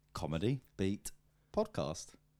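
low, mechanical, robotic droning voice. Signing off a podcast episode with the show name: robotic. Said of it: "I was just like robotic".

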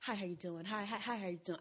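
sweetened, soft, welcoming, polite, pleasant tone. Showing greetings to people in the hallways: imitating own softened pleasant voice. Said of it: "I have to smile when I talk so that I sound pleasant".

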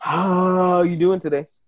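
put-on earth spirit voice. Joking that humid air is the earth breathing, speaking as Mother Earth. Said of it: "Is that how Mother Earth talks on humid days?".

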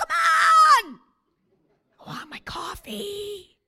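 shrill, very loud, high impatient yell, "on" stretched. Picturing people waiting at the microwave: imitating someone yelling impatiently. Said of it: "stand at the microwave for thirty seconds and yell".

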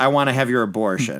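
ordinary delivery

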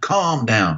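half-hearted, mild yelling. Retelling being screamed at in a dark place, the speaker yells back. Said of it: "And I'm yelling back at them".

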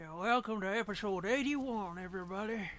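made-up country-type voice. Podcast co-host opening the new episode in a made-up country voice. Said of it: "Whose voice is that?".

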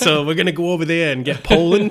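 put-on Boston accent. Telling a whole story in a put-on voice: Massachusetts accent. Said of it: "I'm going to tell this whole thing with a Massachusetts accent".

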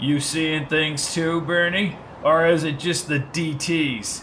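slow, scornful, contemptuous mocking sneer. A man walking ahead of the others, sneering at them. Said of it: "Sneered Hastings as he walked ahead of them".

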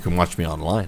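low, soft, creepy murmur. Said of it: "that kinda sounded creepy".

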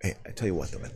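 very soft whisper.

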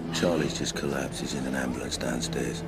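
imitated flat, hateful delivery. Describing a scene, retelling how the woman announced a collapse, mimicking a lifeless, hateful voice. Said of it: "with the most hateful, lifeless voice".

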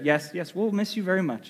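put-on little girl's voice. Parent retelling a drive, the daughter answering from the back seat: daughter's little voice. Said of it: "I hear her little voice in the back seat go".

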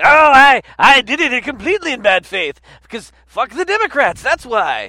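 cartoonish villain voice. Mocking the people who drew the legislation, in a Snidely Whiplash voice. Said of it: "fucking Snidely Whiplash, like rubbing his mustache and going".

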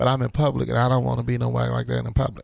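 ordinary talk, nothing marked

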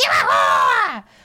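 acted enraged scream. Retelling how a woman screamed at Billy after one conversation, retelling an enraged scream. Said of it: "she screamed at Billy".

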